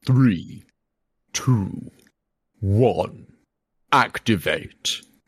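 deep, very slow, drawn-out arena announcer voice. Counting down a robot fight start: imitating the Robot Wars announcer. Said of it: "In the words of".

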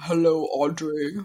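put-on seductive low voice. Mocking a dating app voice message: imitating a put-on sexy deep voice. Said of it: "That's pretty much what it was like".

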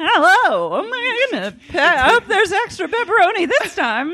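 very high-pitched, star-style celebrity voice. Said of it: "And she's like".

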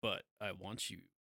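mock creepy, unsettling delivery. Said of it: "with his tone, it comes off as creepy".

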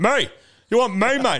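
yelling, pitched way up. Retelling calling out to a police officer during a silent protest: imitating own yell. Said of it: "yelling out".

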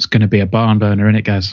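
dry, tongue-in-cheek, sarcastic tone. Looking ahead to Saturday's game, asking the other speaker: sarcastic. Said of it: "I was saying it sarcastically".

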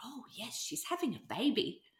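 mock-innocent voice. The speaker recalls answering visitors at the door, putting on mock innocence. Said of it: "I would act all innocent and go".

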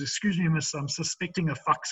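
put-on Afrikaans-accented halting English. Retelling a phone call to hotel reception: broken English with Afrikaans accent. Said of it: "in his broken English Afrikaans".

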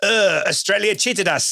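put-on French accent. Podcast host quoting a French official, French accent. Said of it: "you have to do that accent for the rest of the podcast".

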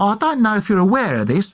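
chatty put-on Essex accent. Speak to the landlady before paying the bill, as Dick Turpin in an Essex accent. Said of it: "I'm doing an Essex accent".

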